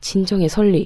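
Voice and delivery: ordinary delivery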